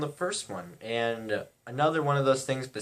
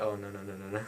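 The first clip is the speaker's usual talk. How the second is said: quiet, hushed half-whisper under the breath; 3 semitones lower, 7 dB quieter than usual. Retelling a girl's reaction in the theater: imitating a girl half-whispering. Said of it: "I hear this girl whispering to someone".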